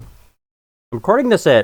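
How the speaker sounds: talking with ice in mouth. Recording a game video on a loading screen, talking with ice in mouth. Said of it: "I have ice in my mouth".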